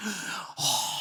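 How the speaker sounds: dazed, soft, breathy whisper.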